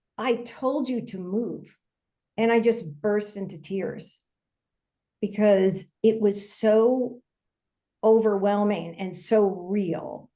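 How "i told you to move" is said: play-acted, near-angry edge in voice. Retelling what Jesus said when he appeared beside the speaker: retelling a somewhat angry voice. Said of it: "like almost in an angry voice".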